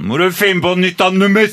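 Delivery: mock drunk, high, loud, drunken shouting.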